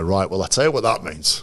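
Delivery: put-on heavy, broad West Yorkshire accent. Quoting JP, who always sat top right of the room, in JP's broad West Yorkshire accent. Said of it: "in his broad West Yorkshire accent".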